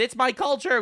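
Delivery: loud, high-pitched shrieked scream. Retelling an audience member's outburst at a show: imitating a lady screaming. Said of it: "Lady screams".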